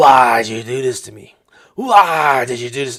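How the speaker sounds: mock full yell. Retelling what was heard through a hotel door: imitating someone yelling. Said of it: "A voice yelling".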